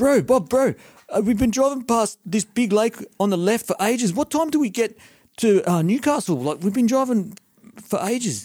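poor fake New Zealand accent, very high. Quoting passengers on a long drive, in a really bad New Zealand accent. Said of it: "this is a really bad New Zealand accent".

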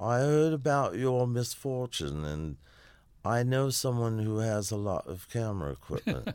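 high put-on Cockney accent. Retelling what Peter Grant said about the stolen equipment, in a Cockney accent. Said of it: "It's not bad".

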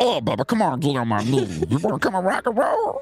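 swooping, sing-song cartoon voice, pitch swinging widely. Goofing around with another speaker, the speaker slips into a Meatwad voice. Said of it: "it's meatwad".

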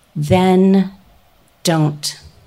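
incredibly calm, even, steady, "then" drawn out. Retelling what a woman said in reply: imitating a calm steady voice. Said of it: "in this incredibly calm, steady voice".

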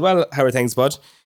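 normal talking voice

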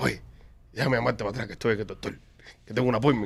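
very quiet, hushed, under-the-breath voice. Retelling what the other speaker said on the phone: imitating someone speaking softly.

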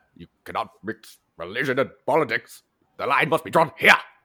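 put-on very loud, high-pitched French accent. Imitating a starship captain against mixing religion and politics: Jean-Luc Picard impression. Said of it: "I love that French accent on Jean-Luc Picard".

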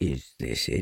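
very low pitch, mildly surprised. Narrator voices Eeyore, just handed a damp rag by Piglet, a little surprised. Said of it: "Said Eeyore, a little surprised".

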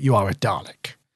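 venomous, poison-laced, menacing delivery. Retelling a scene where he sees Oswin as a Dalek: imitating a venomous delivery. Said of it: "he's quite venomous in his delivery".

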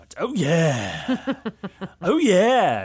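loud mascot-style bellow, yeah stretched out. Billboard podcast host announcing the Oscar nominations, in a Kool-Aid Man voice. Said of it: "It's the Kool-Aid Man voice coming back".

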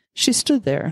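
ordinary delivery, nothing marked

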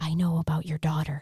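put-on whisper. Retelling a woman's phone call to the family: imitating a whisper. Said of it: "because I whispered it".

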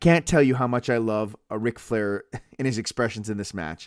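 plain

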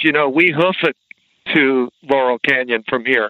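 usual speaking voice

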